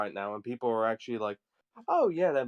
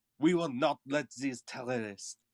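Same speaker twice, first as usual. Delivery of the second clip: put-on, weird, poorly done French accent; 4 dB quieter than usual. Imitating a politician's speech in a weird attempted french accent. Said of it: "I went into a weird accent that wasn't French".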